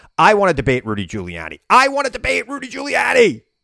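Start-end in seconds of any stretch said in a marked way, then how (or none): 1.7-3.4 very high, wild, demanding shout. Retelling yelling out so the producers would hear: retelling own yell. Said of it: "So I yell out".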